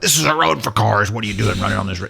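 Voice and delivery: peeved, put-out, irritated tone. Retelling what drivers say while passing a runner: imitating an annoyed driver. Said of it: "you can just hear it in their voice".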